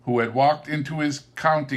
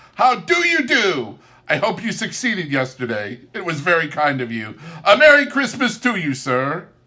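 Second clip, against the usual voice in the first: delighted, eager voice with swooping pitch; 4 semitones higher, 4 dB louder than usual. A narrator voices Scrooge greeting an old gentleman by both hands, delighted and smiling. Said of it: "[name] regarded everyone with a delighted smile. / said [name]".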